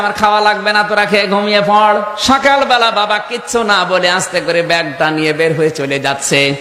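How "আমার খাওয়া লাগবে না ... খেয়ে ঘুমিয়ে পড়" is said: ordinary talk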